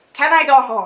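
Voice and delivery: ordinary talk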